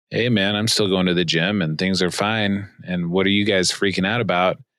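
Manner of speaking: plain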